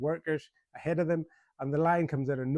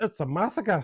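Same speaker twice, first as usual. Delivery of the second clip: put-on Scottish-accented voice; 5 semitones higher, 4 dB louder than usual. Recounting a scene, quoting Nigel Bruce in a Scottish accent. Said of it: "in a Scottish accent".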